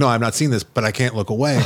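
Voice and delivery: ordinary talk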